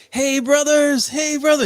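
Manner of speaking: mock very high, loud, super excited voice. Retelling how a camper reacted to a light in the sky: imitating someone super excited. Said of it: "this dude gets, like, super excited".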